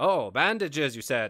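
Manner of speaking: loud, all-business shopkeeper voice. Retelling the same scene after the apothecary straightens up: imitating Michael Kramer's businesslike apothecary. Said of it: "talks all business with him".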